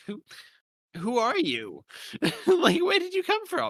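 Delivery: high, squeaky, baffled disbelief. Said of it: "where I was like".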